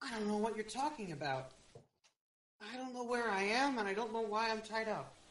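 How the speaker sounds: badly feigned, unconvincing fake innocent, clueless tone. Voicing a tied-up captive questioned by the party: poorly feigned ignorance. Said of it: "She poorly feigns ignorance".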